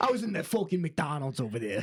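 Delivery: put-on New York accent. Doing a Joey Diaz line that turns into Tommy Vercetti: Tommy Vercetti voice. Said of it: "he's immediately Tommy Vercetti from Vice City".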